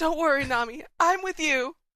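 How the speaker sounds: high, smitten, lovestruck voice. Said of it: "Sanji's only got eyes for one thing".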